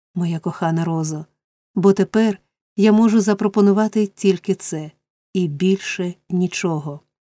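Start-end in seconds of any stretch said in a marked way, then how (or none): none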